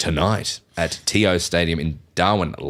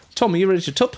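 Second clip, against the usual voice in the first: put-on New Zealand accent, pitched very high; 11 semitones higher than usual. Introducing the footy tipping segment: put-on Kiwi accent. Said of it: "gonna do this in Kiwi accent".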